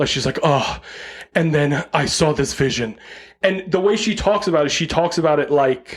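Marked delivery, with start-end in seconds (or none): 0.4-3.0 sounds like everything hurts. Retelling how a woman describes her vision: imitating Rosemary Kerr, sounding like everything hurts. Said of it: "she sounds like everything hurts".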